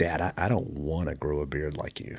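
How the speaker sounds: mock distressed, really upset complaining. Retelling a five-year-old's complaint about growing a beard: imitating someone real upset. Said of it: "real upset".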